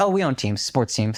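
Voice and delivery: put-on sweet speaking tone. Retelling what a girl at their table said: imitating someone speaking sweetly. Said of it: "very sweetly".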